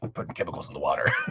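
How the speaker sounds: breathy, scheming, villainous whisper. Joking about a ranting voice in a character's head: Alex Jones impression. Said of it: "Alex Jones doing his, like, impression of the evil elites".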